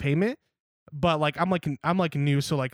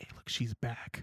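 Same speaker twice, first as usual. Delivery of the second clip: put-on whisper, much quieter and lower; 4 semitones lower, 12 dB quieter than usual. Retelling how they alerted their manager when she came back in, retelling a whisper. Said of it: "I whispered to my my like manager".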